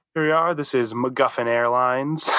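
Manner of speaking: ordinary talk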